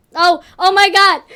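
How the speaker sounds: loud, excited blurt. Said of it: "I'm flailing".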